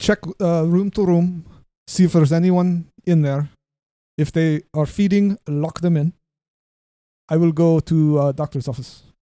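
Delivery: fake Russian accent with broken English. Playing the Russian private eye character, in a put-on Russian accent. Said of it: "The Russian. ... I'm a private eye".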